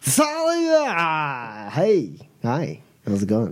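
tipsy slur, one word drawn out long. Voicing Asheron with his arm around Boots as he greets Thalia, drunk Asheron voice. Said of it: "with Boots drunkenly".

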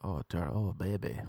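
playful mock dirty-talk voice. Speaker showing how they would do dirty talk, mock dirty talk. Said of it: "That's how good I am at dirty talk".

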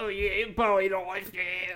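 bad put-on Australian accent.

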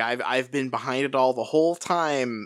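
ordinary talk

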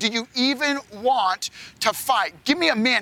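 mock, scornful, goading taunt. Retelling how Goliath taunted the Israelites: taunting like Goliath. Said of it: "Goliath taunting them".

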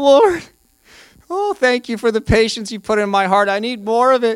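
high, tearful, emotional, weeping voice. Speaker acts out someone on their knees praying, mock weeping prayer. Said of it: "you're weeping and you're like".

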